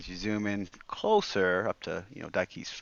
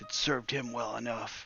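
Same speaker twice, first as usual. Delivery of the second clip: grudging mutter, half to herself, barely audible; 3 semitones higher, 4 dB quieter than usual. Narrating a story, a woman bows her head in frustration, muttering. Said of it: "She mutters".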